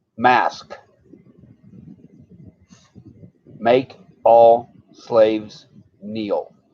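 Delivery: slow, deliberate delivery. Repeating a phrase in case they said it too fast, slow and deliberate. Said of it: "in case I said it too fast".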